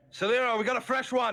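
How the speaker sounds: very loud, very high voice calling out from afar. Game master voicing someone calling out down the hall, calling out loudly. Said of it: "you hear a voice call out".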